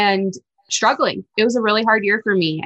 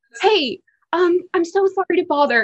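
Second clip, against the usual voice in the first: put-on cute little voice, higher and slower; 8 semitones higher than usual. Retelling how a woman carrying stuff approached her and her mom, imitating a cute little runny voice. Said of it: "In her cute little runny way".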